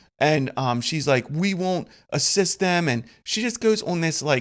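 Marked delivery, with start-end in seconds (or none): 1.3-2.9 put-on bratty, childish toddler-like ranting voice. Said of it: "three-year-old tirade".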